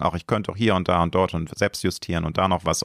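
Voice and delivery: plain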